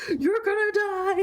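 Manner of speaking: put-on frantic, terrified scream, very high. Recounting a man running out, imitating a scared scream. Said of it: "He was so scared".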